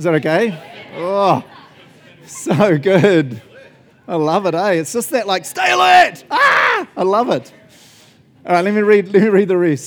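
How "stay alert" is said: aggressive, forceful bark, very high-pitched and loud. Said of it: "you have to say it aggressively".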